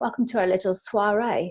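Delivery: put-on British accent. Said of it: "She's, uh, British, so she's got an accent".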